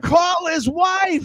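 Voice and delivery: very high, shrill, top-of-the-lungs scream. Retelling a wrestling fan in the background: imitating a fan screaming. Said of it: "just screaming at the top of his lungs".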